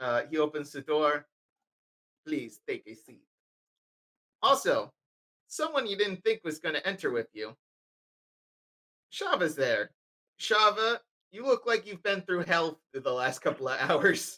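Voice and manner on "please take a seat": hushed, soft, awful put-on French accent. Voicing a character who opens the door for the group, terrible French accent. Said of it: "terrible French accent".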